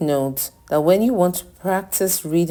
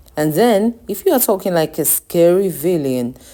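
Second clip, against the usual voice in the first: ordinary delivery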